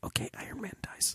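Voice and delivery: hushed whisper under the breath, very soft. Retelling telling a friend a spoiler: imitating saying it really quietly. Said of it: "I was being really quiet".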